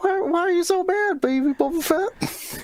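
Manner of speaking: put-on very high, cross, tiny little-kid squeak. Imagining a show with baby versions of characters: angry Baby Boba Fett voice. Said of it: "Baby Boba Fett would be all angry and be like".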